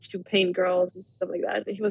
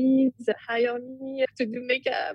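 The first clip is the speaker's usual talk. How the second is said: put-on very strong, heavy, thick French accent; 4 semitones higher than usual. Retelling calling famous modeling agencies for makeup work, the speaker uses a very strong French accent. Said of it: "with a very strong French accent".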